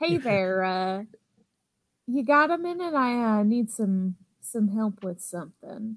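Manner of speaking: put-on American Southern accent. Playing someone coaxing a person in accounting toward their computer: Southern accent. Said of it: "I was going to go with Southern".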